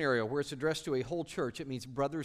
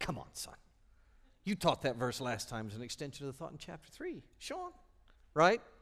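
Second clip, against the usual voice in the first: animated sitcom-sidekick voice, wide swooping pitch. Speaking to listeners about a verse, act out what the observant ones are thinking, in a Burton Guster voice. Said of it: "in your Burton Guster voice".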